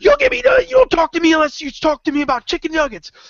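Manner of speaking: very high, play-acted crazed ranting voice. Telling a story, the speaker quotes a woman in her car demanding chicken nuggets: retelling a crazed rant. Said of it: "And she goes crazy".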